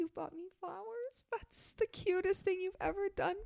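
acted, very high, soft tearful crying voice. Retelling an overheard woman, imitating her quiet crying voice. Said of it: "she's like talking quiet because she's kind of crying".

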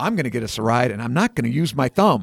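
normal talking voice

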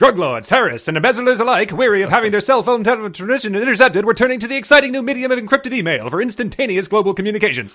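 put-on very high, loud, old-timey newsreel announcer voice. Reading a passage aloud, in an old-timey newsreel voice. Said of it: "I read that in an old-timey newsreel voice".

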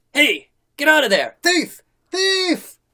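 very high, swooping shout from far off. A storyteller voices someone unseen outside the hut: shouting from far off. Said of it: "you hear a voice shout from outside".

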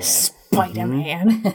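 low, slow drawling voice.

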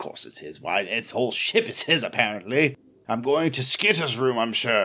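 sulky mumbling, muttered. Playing Castian sulking off to his room, mumbling sulkily in character. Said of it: "and Castian mumbles".

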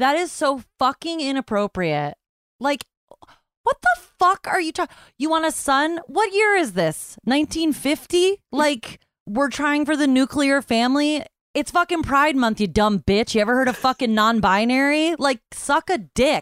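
venting in full fury, furious, enraged rant. Speaker rants about a woman asking about her family planning; furious. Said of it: "I am furious right now".

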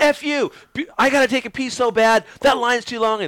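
imitated high yell. Retelling what a woman said to a man in line, retelling a woman yelling. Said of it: "the chick's like yelling at Hart".

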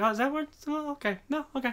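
very high, sarcastic, tossed off sideways as an aside. Describing a comedian's cadence, imitating David Spade sarcastic side-talk. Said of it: "his cadence is very interesting, like, the way he'll ... side talk people".

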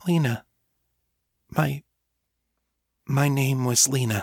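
shy hushed whisper. After a long pause, she tells Miriam her name in a timid whisper. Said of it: "she spoke in a timid whisper".

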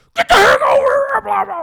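shrill, very loud, high scream. Retelling how a motorcycle cop ordered him over: imitating a cop screaming. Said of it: "this guy's screaming".

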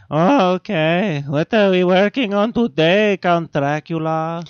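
put-on loud, high-pitched Mexican accent. Imagining a modern Dracula, playing Igor answering the Count in a Mexican accent. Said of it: "He's a Mexican".

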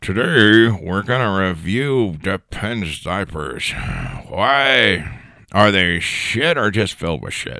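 put-on elderly old man character voice. Hosting a pretend future podcast as Old Man Voss: old man voice. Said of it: "Old Man Voss".

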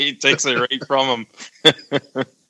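slow, high-pitched speech while laughing.

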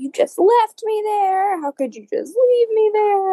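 mock yell, pitched way up very high. Retelling a couple's sidewalk quarrel overheard through the window: imitating a girl yelling.

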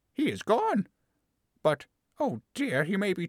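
half-frightened, half-glad muttering. After a voice dies out, she glances up, half-frightened, half-glad mutter. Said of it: "muttered in a half-frightened, half-glad way".

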